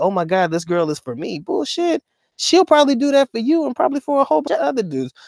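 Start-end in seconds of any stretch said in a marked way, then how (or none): none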